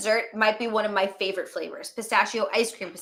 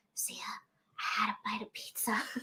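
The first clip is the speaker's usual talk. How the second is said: very slow, hushed whisper; 14 dB quieter than usual. Retelling how the drunk listener whispered in the kitchen: imitating a whisper. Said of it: "you sort of whispered to me".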